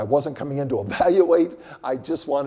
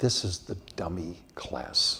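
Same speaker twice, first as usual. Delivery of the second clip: low, hushed voice, quieter and lower; 7 semitones lower, 8 dB quieter than usual. Retelling what the young man at the next desk leaned over and said: low voice. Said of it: "in a low voice".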